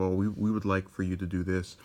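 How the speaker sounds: plain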